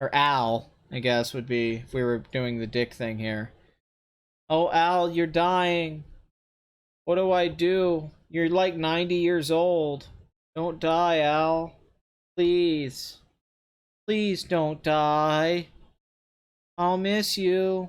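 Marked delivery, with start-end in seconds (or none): 4.5-17.9 slow, drawn-out pleading, each line dragged. Mocking a film scene where Batman begs dying Alfred: mock George Clooney pleading. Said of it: "George talking to, to dying Alfred".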